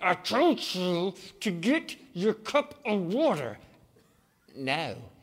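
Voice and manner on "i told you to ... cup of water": slow alien monster voice. A parent talking about their kids does the Venom alien voice. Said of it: "that alien thing living inside me".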